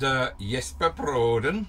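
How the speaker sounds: bad, crude put-on Swedish accent. Saying a name in a crap swedish accent. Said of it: "I say that with a Swedish accent that is as crap as the stuff".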